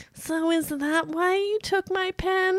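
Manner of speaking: put-on very high, slow, drawn-out condescending tone. Retelling a favourite scene, quoting Annie's comeback: imitating Annie, condescending. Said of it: "this is such a condescending face".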